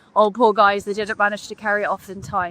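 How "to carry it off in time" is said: ordinary talk, nothing marked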